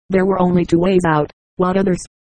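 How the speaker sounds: ordinary delivery, nothing marked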